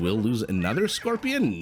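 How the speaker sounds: pitch climbing upward on "Scorpion". Commentating a fight, turning the call into a question: rising question lilt. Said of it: "the lilt or whatever it is of my voice".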